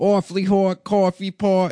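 put-on Boston accent, male voice. Showing the others how the voice really sounds, in a Boston accent. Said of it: "It's a guy from Boston".

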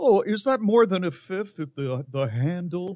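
mock-innocent tone. Telling the listener not to act innocent, quoting their question in a mock-innocent tone. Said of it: "don't try to act innocent with".

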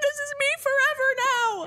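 almost crying. Retelling a reaction after speech went weird: imitating own past near-tears. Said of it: "almost crying".

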